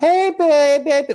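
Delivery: put-on very high-pitched, squeaky baby talk, cooing. Speaker showing how people suddenly talk to loved ones, in baby talk voice. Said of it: "talking like a baby".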